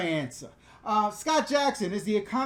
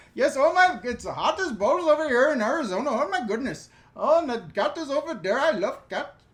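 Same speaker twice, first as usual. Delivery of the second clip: performed, put-on Indian English accent; 4 semitones higher than usual. Answering viewer questions while they watch, doing an indian accent impression. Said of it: "I'm going to stop with the accent".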